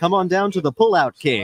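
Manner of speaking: local TV commercial announcer voice. Answering a request for a mattress ad: mattress ad voice. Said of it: "Give me a mattress ad".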